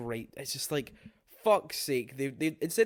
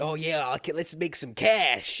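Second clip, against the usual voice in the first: hammy, put-on, silly cartoonish villain voice. Describing an actor's approach to a role, the speaker puts on a voice. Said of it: "this is just me putting on a voice".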